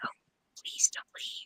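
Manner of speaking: faint, barely audible whisper. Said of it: "I barely whispered".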